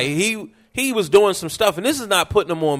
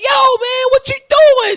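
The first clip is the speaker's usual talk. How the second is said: put-on very high, loud falsetto with Baltimore accent; 8 dB louder than usual. Describing how Baltimore cats talk, imitating them in a falsetto voice. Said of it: "they go into that falsetto on you".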